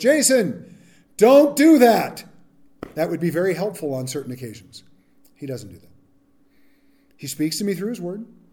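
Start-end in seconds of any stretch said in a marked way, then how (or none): 0.0-2.2 very loud, very slow, booming heavenly voice. Speaker imagines God speaking to him from the heavens: God's loud booming voice. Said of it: "spoke in a loud booming voice".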